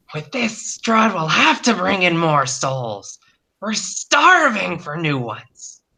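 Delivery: high-pitched, strange, hungry monster voice. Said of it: "one of them saying".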